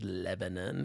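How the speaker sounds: put-on "Lebanon" in Okie accent, very low and soft. Recalling how an educated woman always said one word, saying it like an Okie. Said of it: "saying Lebanon like an Okie".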